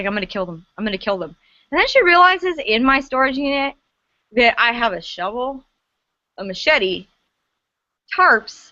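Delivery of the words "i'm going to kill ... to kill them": low, rapid, repeated grumbling under the breath. Speaker retells what a woman kept saying, imitating someone muttering. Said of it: "she kept muttering".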